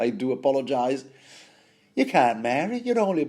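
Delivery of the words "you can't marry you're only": put-on botched northern English accent, very high pitch. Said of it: "I can't do a proper northern accent".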